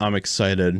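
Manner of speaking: mock excitement, flat and deadpan, zero enthusiasm. Imitating a cast member claiming to be excited: imitating an unexcited delivery. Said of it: "That's basically how she said it".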